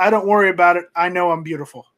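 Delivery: ordinary talk, nothing marked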